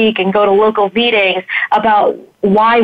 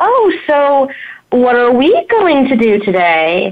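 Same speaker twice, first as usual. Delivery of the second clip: put-on condescending, swooping sing-song voice, as if to a child; 4 semitones higher than usual. Mimicking people who stop talking to them as an adult: childlike voice. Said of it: "suddenly the voice turns into".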